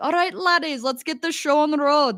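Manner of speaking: fake Australian or New Zealand accent. Recalling a phrase used to say with a brother: put-on australian accent. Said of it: "like Australian or a New Zealand accent where I'd be like".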